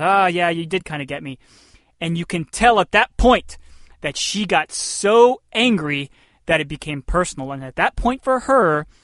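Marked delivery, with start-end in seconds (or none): 0.0-1.4 put-on chuckling. Retelling an interview, quoting the interviewer: imitating someone chuckling back. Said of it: "she kinda chuckles back and says".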